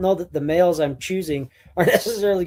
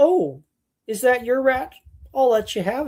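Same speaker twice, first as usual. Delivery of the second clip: mock-polite dog voice, higher pitch; 7 semitones higher than usual. Voicing a dog who lets another dog take her rat: mock-polite dog voice.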